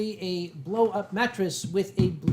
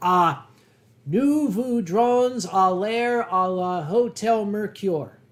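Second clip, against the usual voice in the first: very slow, bad French in a put-on Boston accent; 5 dB louder than usual. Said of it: "with Boston accent".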